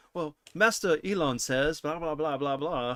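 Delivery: prim, proper robot butler voice. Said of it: "C three P O".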